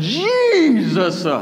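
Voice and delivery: heavy stress on first syllable of Jesus. Retelling reading a name aloud when nothing worked: heavy stress on first syllable of Jesus. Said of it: "you start to put the emphasis on the first syllable".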